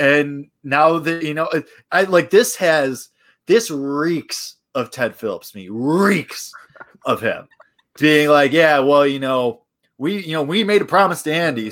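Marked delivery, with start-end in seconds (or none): 8.5-11.7 put-on, laid-on Southern American accent. Imitating Ted Phillips explaining a promise: Southern accent as Ted Phillips. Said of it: "I just gave Ted Phillips a Southern accent".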